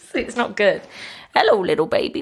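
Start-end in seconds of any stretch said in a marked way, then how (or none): 1.3-2.2 pretend babushka voice, higher. Showing another speaker the voice used to calm a baby: put-on babushka voice. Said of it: "I sort of kind of pretend to be like a babushka".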